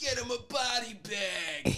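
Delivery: mock very high, maniacal screaming, "bag" drawn out. Speaker quotes the antagonist's buddy from an 80s movie's final battle: imitating someone screaming. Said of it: "he's just like screaming like".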